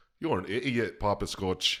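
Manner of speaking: bad English accent that drifts into Irish. Asked to say a line in an english accent, the speaker attempts it: bad english accent. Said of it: "Say it in an English accent".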